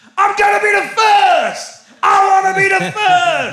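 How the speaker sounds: put-on scream. Retelling a game show contestant screaming at his final two boxes: imitating a contestant screaming. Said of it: "he started screaming".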